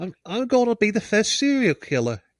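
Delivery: put-on high, childish little boy voice. Picturing a young killer talking: imitating a childish boy voice. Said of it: "a little frickin' potato spud boy like him".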